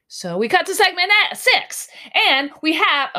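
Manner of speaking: screaming into the mic. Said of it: "heard me scream into the mic".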